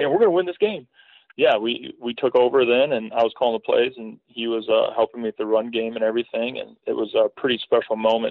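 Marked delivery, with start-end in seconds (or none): 0.0-0.9 mock super-excited burst, high and squeaky. Retelling what he said in that moment, imitating him super excited. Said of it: "he's just like super excited".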